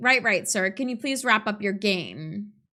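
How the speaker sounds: ordinary talk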